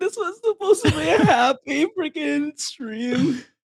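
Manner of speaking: tearful. Reacting during a stream after laughing hard: crying. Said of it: "I shouldn't be crying".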